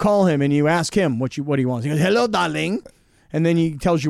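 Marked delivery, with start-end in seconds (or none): 2.0-2.8 put-on French accent. Imitating how a french friend answers the phone: put-on french accent. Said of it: "What kind of accent is that?".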